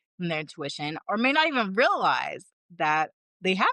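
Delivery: ordinary delivery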